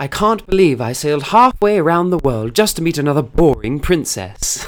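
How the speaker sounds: put-on stage British accent. Retelling a first prince role in a school show: british accent. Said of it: "this British accent came out of me".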